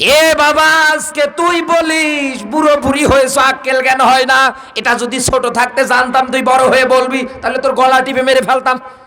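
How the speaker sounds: anguished, pained voice.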